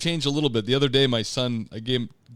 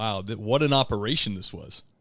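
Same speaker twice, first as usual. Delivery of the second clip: usual speaking voice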